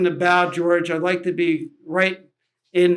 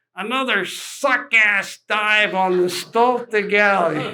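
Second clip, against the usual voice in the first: put-on strong New York accent; 3 semitones higher than usual. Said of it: "strong New York accent".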